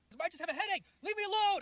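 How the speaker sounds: furious screaming. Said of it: "she starts screaming at me".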